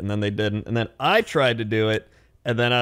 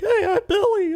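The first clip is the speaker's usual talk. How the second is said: very high, goofy put-on character voice. Showing the goofy machinima voices he was known for: Billy character voice. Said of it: "with all the voices".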